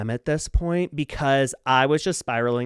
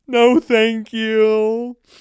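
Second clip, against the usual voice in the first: high, loud, weepy wail with last word stretched; 9 semitones higher, 8 dB louder than usual. Retelling turning down a stranger from the car: imitating own past crying. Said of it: "crying, in my car go".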